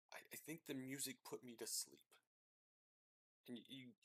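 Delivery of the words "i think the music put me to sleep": muttered quietly under breath, quieter. Voicing a guard speaking so the commander won't hear: under his breath. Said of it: "under his breath so that the commander wouldn't hear".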